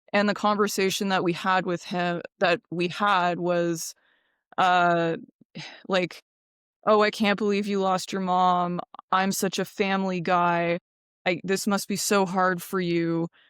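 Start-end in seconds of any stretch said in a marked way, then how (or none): 6.8-13.3 acted, mock-teary emotional voice. Retelling what a wealthy man said about the speaker's lost mom: imitating someone emotional. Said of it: "he got really emotional and he was like teary eyed".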